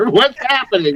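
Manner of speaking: yelling in alarm. Playing a scared character who starts yelling over and over: yelling in alarm. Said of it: "I just start yelling over and over".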